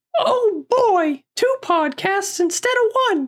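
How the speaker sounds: very high, squeaky cartoon voice, swooping all over. Podcast host describing the show, doing a Mickey Mouse impression. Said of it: "Did I sound like Mickey Mouse?".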